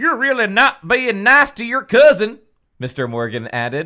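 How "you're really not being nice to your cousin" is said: very loud, high-pitched put-on Southern hillbilly accent. Player voices a character reproaching a girl about her cousin, hillbilly accent. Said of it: "That was more hillbilly than cowboy. / he told her. / That was more hillbilly than cowboy".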